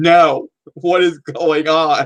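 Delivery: scream stretched out very slowly. Retelling getting up in the movie theater: imitating own past scream. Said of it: "I got up and I screamed".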